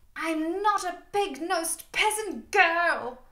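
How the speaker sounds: snarling. A narrator reads a woman in labour who flung a mirror at her consoler, snarling. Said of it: "she snarled".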